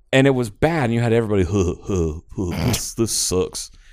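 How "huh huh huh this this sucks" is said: put-on cartoon teenager voice. Showing how everyone imitated the cartoon teens: Beavis and Butthead impression. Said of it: "people just constantly imitating them".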